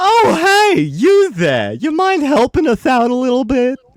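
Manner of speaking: very high, very loud, shrill, booming goofy clown voice. Game master voicing a clown who asks the party for help, clown character voice. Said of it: "the voice is very inspired".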